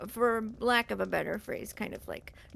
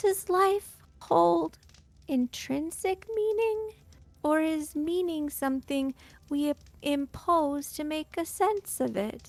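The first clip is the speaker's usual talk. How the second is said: tiny, high little voice; 7 semitones higher, 6 dB louder than usual. Speaker acts out a voice heard inside one's head; tiny little voice. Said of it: "the tiny little voice says".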